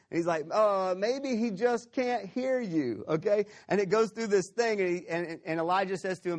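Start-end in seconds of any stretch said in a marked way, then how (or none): 0.5-3.0 play-acted, high, slow, drawn-out mocking drawl. Retelling a prophet taunting praying worshippers: imitating Elijah mocking. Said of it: "he starts to mock them".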